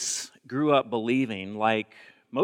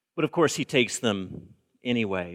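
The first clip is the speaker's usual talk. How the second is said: plain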